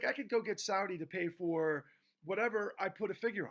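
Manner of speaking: normal talking voice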